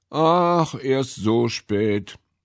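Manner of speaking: yawning, bored. Narrator reads a man who just woke and checked the clock: yawning, bored. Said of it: "gähnte gelangweilt und sagte".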